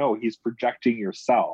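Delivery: ordinary delivery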